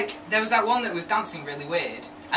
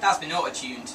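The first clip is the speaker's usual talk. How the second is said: ordinary talk, nothing marked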